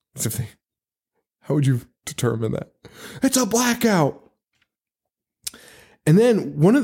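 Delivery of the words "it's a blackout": very high, shrill shriek. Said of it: "You hear people screaming".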